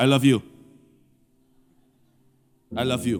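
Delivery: flat robot-like delivery. Showing how a father might say it to his child, flat robotic monotone. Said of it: "Robot kali?".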